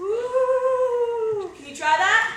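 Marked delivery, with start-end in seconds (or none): 0.0-1.5 high, drawn-out, spooky ghostly ooh moan. Demonstrating a scary ghost sound for others to copy: spooky ghost 'ooh' moan. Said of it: "make a scary ghost sound, like this".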